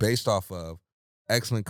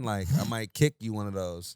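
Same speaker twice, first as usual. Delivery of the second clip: ordinary delivery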